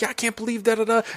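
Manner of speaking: high-pitched yelling. Retelling a scene where a woman yells at a man through a toilet: imitating someone yelling. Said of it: "she's yelling at him".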